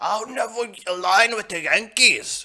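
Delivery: put-on worst-ever Irish accent, very high and very loud. Retelling a movie scene, quoting Gerald in a bad Irish accent. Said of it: "That was the worst Irish accent ever".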